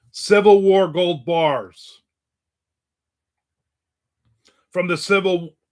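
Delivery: shouting. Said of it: "Why are you yelling?".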